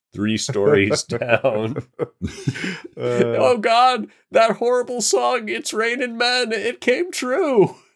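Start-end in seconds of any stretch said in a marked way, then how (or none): 3.0-7.7 very high, overacted mock dramatic lament. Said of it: "I was doing a bit there".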